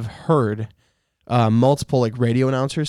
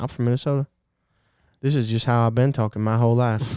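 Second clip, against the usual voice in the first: put-on Southern drawl accent. Joking about answering where you're from: put-on Southern accent. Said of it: "you're talking like this".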